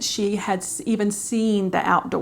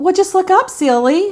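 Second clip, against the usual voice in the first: put-on sweet Southern accent, higher and louder; 10 semitones higher, 9 dB louder than usual. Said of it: "in her little sweet Southern accent".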